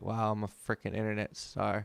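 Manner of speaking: normal talking voice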